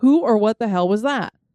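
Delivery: ordinary talk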